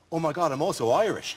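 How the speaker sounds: ordinary talk, nothing marked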